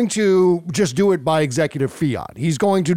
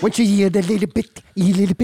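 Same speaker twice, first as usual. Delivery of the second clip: put-on baby talk voice, higher; 4 semitones higher than usual. Mocking a clip of Donald Trump just played: Donald Trump baby talk voice. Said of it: "his little baby talk voice".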